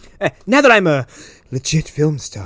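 breathy old-timey actress voice, put-on impression. Imitating the actress Erica trying to impress: breathy old-timey actress voice. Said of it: "that breathy voice of, like, an old-timey actress".

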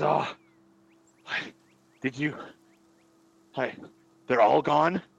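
terrified, frightened voice. Narrating a scene, voicing a man who collapses on all fours, terrified voice. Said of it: "but he is terrified".

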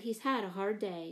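plain

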